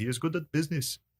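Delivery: clumsy put-on Indian accent, high and soft. Retelling what an Indian man in an airport said, in a bad Indian accent. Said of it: "my Indian impression there was bad".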